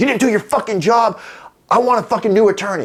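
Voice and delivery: very high, furious, shrieking, screaming tirade. Retelling a phone call with his free attorney, retelling screaming at the phone. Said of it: "And I'm like screaming at the phone".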